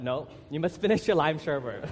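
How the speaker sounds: ordinary delivery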